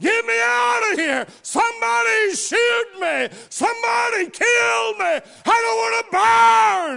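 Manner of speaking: put-on desperate hollering. Telling of a man engulfed in flames, imitating desperate hollering. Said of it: "and he was hollering".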